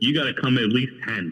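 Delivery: ordinary talk, nothing marked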